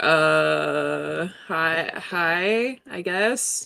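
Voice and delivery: very slow, soft, awkward, hesitant delivery. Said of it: "the awkward wave".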